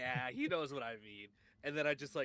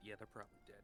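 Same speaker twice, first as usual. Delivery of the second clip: very low, whispered mutter under the breath; 3 semitones lower, 14 dB quieter than usual. Looking over at a companion after hearing they've been gone since morning, muttering under breath. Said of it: "Like very low under my breath".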